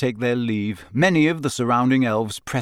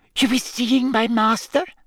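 elf voice, out of breath; 11 semitones higher than usual. Audiobook narrator reading the elf's reply to Hermione, breathless Winky voice. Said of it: "said Winky breathlessly".

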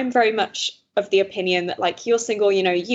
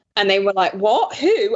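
usual speaking voice

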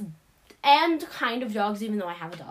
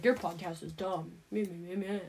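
low, jeering, dismissive, mocking voice; 5 semitones lower, 9 dB quieter than usual. Imitating a brother who mocks the podcast: imitating brother's mocking voice. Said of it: "That's an impression of my brother".

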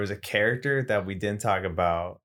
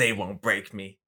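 put-on gruff character voice. Describing a scene to the group, imitating a character's gruff voice. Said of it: "He's like all like gruff and shit".

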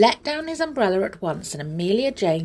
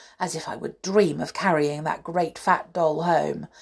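plain reading voice

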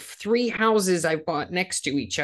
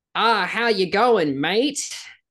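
attempted Australian accent; 3 semitones higher, 4 dB louder than usual. Wanting to get back into voice acting, the speaker tries out an australian accent. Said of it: "Let me try an Australian accent right now".

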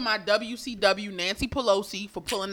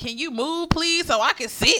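put-on bossy toddler voice, high, full of attitude; 6 semitones higher, 4 dB louder than usual. Retelling what a two-year-old said to a woman on the couch, imitating her attitude. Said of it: "with an attitude".

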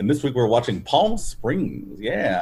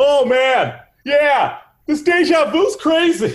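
over-the-top, loud, high-pitched, drawn-out delivery; 5 dB louder than usual. Imagining a movie repeating ridiculous things over and over: Andy Samberg impression. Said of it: "that was a pretty good Andy Sam-".

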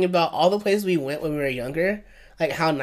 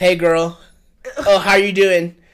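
put-on breezy voice, higher and louder; 4 semitones higher, 7 dB louder than usual. Mocking how a man from the show enters rooms: imitating Chris entering a room. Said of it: "I hate the way he enters rooms".

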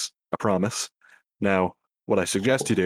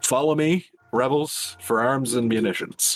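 rousing, pitched-up calling out; 5 semitones higher than usual. Player describing their character jogging off, yelling back to everyone. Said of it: "after yelling back to everyone".

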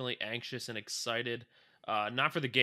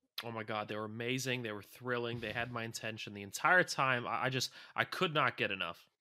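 ordinary talk

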